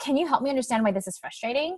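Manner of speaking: hurried straight through, no breath between words. Showing a reply given without breathing or thinking: rushed, without a breath. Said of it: "I didn't breathe and I didn't think about it or give it a break".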